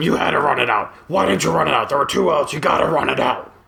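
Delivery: rough, creaky, hard scolding voice. Retelling a coach repeating his complaint during warm-ups, like Mister McMahon. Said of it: "I feel like I'm sounding like Mister McMahon".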